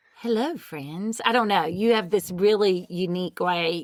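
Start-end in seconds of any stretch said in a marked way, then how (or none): 0.2-1.2 soft, sweet pet-talk voice. Mimicking how the other speaker greets the cats each morning: imitating someone's cat voice. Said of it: "It- It's more like".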